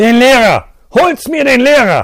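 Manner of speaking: very loud, shrill, booming shout. A man throws open the door and calls into the hallway: shouting. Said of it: "schrie in den Flur hinaus".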